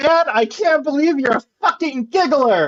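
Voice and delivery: all-out, high, shrill screaming yell. Character leaving the mansion, screaming at their dad. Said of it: "I'm going to just be screaming".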